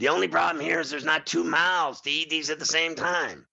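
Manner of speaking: put-on tv ad pitchman announcer delivery. Retelling a TV ad, imitating the Burger King commercial guy. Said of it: "He's like".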